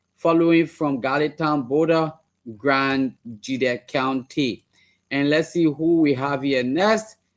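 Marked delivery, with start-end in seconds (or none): none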